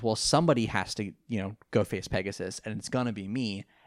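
ordinary talk, nothing marked

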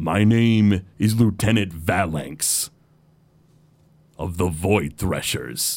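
self-assured, smug orc voice with a smirk. Game master narrating, an orc faces someone drawing a bow: smirking orc voice. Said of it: "the orc just sort of like smirks and he says".

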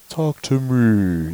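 creepy changed voice, me stretched out. Retelling a movie scene where a child answers his mother: imitating the kid's changed voice in Stir of Echoes. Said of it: "the voice changes".

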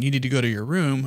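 ordinary talk

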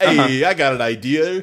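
put-on voice with Brooklyn accent. Narrating the story, the speaker retries Mr. Bear's line to Junior in a Brooklyn accent. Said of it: "he's got like a Brooklyn accent".

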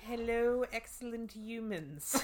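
put-on German accent. Asked to do the podcast intro, say this in that german voice. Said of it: "you got to do it in that German voice".

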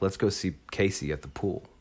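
ordinary talk

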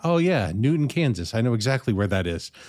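put-on sarcastic tone. Imitating listeners who claim to know the town: imitating listeners sarcastically. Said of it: "that was sarcasm".

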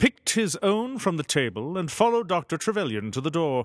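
plain

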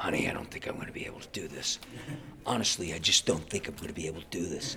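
hoarse, raspy, soft whisper, voice nearly lost. Telling how he phoned his wife after screaming sessions, mimicking lost voice, like Alec Baldwin. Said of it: "and I had no voice".

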